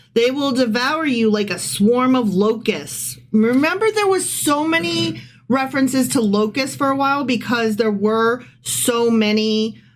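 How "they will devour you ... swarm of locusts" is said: usual speaking voice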